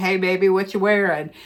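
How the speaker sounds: put-on creepy voice. Describing how romance audiobooks sound, imitating a creepy guy. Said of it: "sounds like some creepy guy in my".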